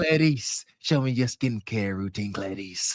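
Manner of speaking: very low, sinister, creepy movie-villain voice. Joking about a creepy comment about skincare: Hannibal Lecter voice. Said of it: "like Hannibal Lecter".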